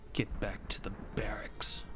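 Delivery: low, hushed, urgent whisper. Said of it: "As she looks to you all and goes".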